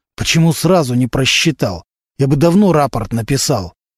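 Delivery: ordinary delivery, nothing marked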